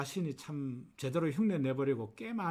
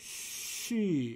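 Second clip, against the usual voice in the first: 쉬 drawn out exaggeratedly long. Pronunciation lesson joining consonant and vowel; exaggeratedly long 쉬. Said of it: "제가 조금 가장되게 길게 어, 어, 어, 발음을 했는데요".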